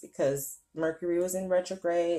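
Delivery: normal talking voice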